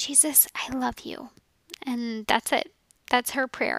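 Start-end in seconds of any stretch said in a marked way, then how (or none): 0.0-1.3 soft, hushed little whisper. Retelling a daughter's bedtime prayer, imitating a whispered prayer. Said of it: "just in a whisper".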